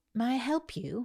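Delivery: put-on British accent. Retelling what a mentor said to her: imitating a British accent. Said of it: "and she had a British accent".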